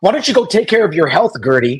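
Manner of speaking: high-pitched, mild half-scream. Retelling an argument between two women: imitating someone screaming. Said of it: "Larsa screaming".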